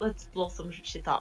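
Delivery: put-on Russian accent. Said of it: "Can I say in a Russian accent".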